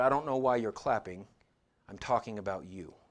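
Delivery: very quiet, soft, understated voice. Retelling what Paul said to a clapping crowd: retelling words said very quietly. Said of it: "He said very quietly".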